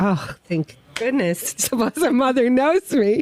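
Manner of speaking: mock near-tearful voice. Retelling own reaction to a message from the Blessed Mother: imitating own near-tearful voice. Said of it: "I'm almost in tears".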